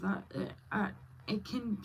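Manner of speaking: stuttering. Speaker talking about speech therapy being expensive, stuttering. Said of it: "I stutter and I have speech issues myself".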